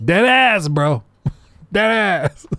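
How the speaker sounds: very slow, drawn-out, high slang drawl. Reacting to others' speech, imitating their slang talk. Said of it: "Do I have to start talking like this?".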